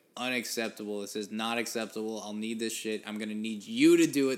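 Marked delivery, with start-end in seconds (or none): none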